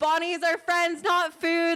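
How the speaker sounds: high, frantic, full-throated hollering. Retelling running down a mountain making noise, retelling a shout. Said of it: "I was shouting at one point".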